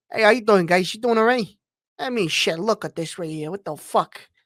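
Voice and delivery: New York Italian mobster accent. A gamer shows the voice of a character he made: New York Italian mafia voice. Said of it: "like a New York Italian mafia guy".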